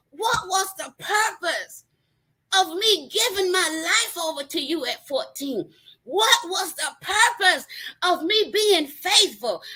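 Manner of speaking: high, crying, tearful scream. Telling how they screamed at God, retelling own screaming. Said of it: "I was screaming".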